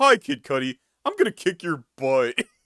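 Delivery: cartoon character voice swooping widely in pitch. Picturing a one-sided beef as a cartoon scene: Flats from SpongeBob voice. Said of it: "it's a Flats SpongeBob kinda thing".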